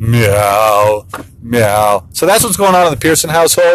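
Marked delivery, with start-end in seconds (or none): 0.0-2.1 every meow long and stretched out. Pretending to be the Papa Cat at home, Papa Cat voice meowing. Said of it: "I do this Papa Cat voice where I go".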